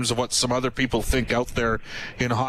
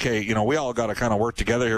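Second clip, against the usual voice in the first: ordinary talk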